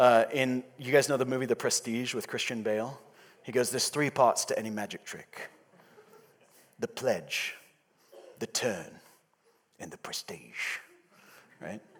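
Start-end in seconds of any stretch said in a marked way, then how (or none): 3.7-10.8 put-on soft Cockney accent. Quoting a line from the movie The Prestige to listeners, in a Michael Caine Cockney accent. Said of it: "the second time I got to do a Cockney accent".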